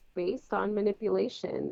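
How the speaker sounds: ordinary talk, nothing marked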